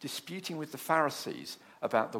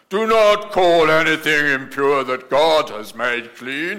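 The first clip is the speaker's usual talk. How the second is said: booming, very loud, slow and deliberate proclamation; 17 dB louder than usual. Retelling God's reply to Peter's refusal, in a booming voice of God. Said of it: "I think he was booming at this point".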